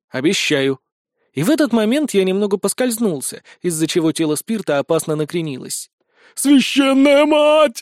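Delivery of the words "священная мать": piercing, shrill, loud, high squeal. Spirt lurches as the narrator slips while pulling him, squealing. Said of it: "взвизгнул".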